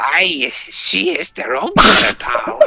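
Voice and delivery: put-on Scottish burr with wise old sage manner. Voicing a character line after being asked for a Yoda voice: Scottish Yoda voice. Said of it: "the Scottish Yoda voice".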